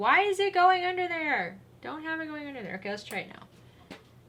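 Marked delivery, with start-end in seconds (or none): 0.0-2.8 high, mock yelling. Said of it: "yelling at me going".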